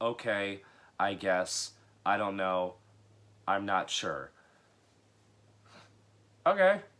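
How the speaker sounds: flat, droning, one-note monotone. Reviewing a movie, mimicking an actress's dialogue: mock monotone delivery. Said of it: "She gives a very monotone performance".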